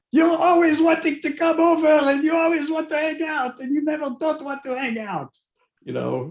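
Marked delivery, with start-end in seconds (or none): 0.1-4.9 put-on Israeli accent, higher and louder. Joking with friends in a dad's manner: imitating an Israeli accent. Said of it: "in the Israeli accent".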